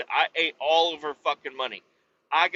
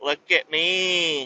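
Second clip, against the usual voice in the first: mocking smug show-off voice. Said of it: "walking around with it like she's hot fucking shit".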